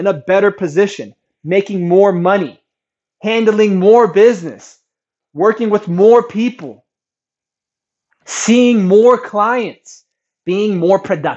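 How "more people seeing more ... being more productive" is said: normal talking voice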